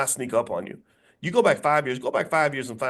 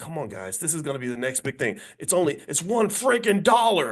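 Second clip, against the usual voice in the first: put-on earnest, coaxing, begging plea; 3 semitones higher than usual. Retelling how a man urged people to buy Bitcoin, imitating him begging. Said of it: "He was begging people to buy Bitcoin".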